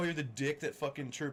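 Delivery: ordinary delivery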